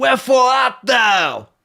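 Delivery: very high, loud put-on Brooklyn American accent. Imagining how Shakespeare would sound today, put-on Brooklyn American accent. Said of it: "Is that your American accent?".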